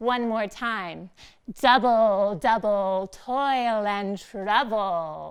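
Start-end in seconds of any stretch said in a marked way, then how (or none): 1.6-5.3 very slow, heavily nasal voice. Leading listeners in saying a Shakespeare line together, nasal voice. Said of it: "in our nasal voice".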